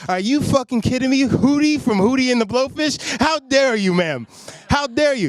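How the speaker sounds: riled-up, upset outburst. Retelling his reaction to being mistaken for someone: imitating his own upset outburst. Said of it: "I got upset".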